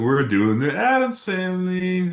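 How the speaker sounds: mocking sarcasm. Imitating how the co-host just sounded: imitating a sarcastic tone. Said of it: "You're sounding sarcastic. You're like".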